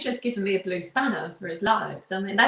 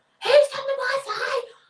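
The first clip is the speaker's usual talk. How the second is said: shrill, high, drawn-out, slow angry shout. Act out him stomping out of the room and opening the door, imitating an angry shout. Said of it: "He shouted at us up the stairs".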